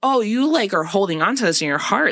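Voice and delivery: ordinary talk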